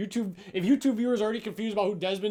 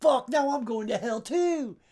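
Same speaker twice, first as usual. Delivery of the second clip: put-on voice sounding caught out, pitched higher; 4 semitones higher than usual. Retelling how someone reacted to being caught out: imitating Chris's voice. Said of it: "hear it in his voice".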